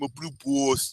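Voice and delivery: put-on New York accent. Retelling a funny cartoon line: Mister Garrison New York accent. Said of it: "Mister Garrison with his New York accent".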